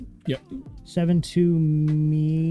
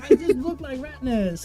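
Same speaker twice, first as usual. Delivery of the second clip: put-on broken foreign accent, mock broken English; 9 semitones higher than usual. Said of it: "Just talking like a really broken foreign accent".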